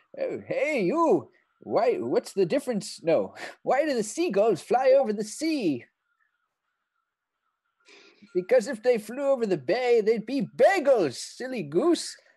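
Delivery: high, loud taunting call. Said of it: "I'm just gonna call out".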